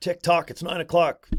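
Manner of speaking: rapid-fire, rattled-off fast pop radio announcer patter. Speaker showing how you can speed up your talking, talking real fast. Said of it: "you can speed it up and talk real fast".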